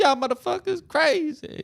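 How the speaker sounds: very high, loud, switched-over casual register. On a podcast, show how the Congresswoman talks now, in a Jasmine Crockett voice. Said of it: "and now she talks like".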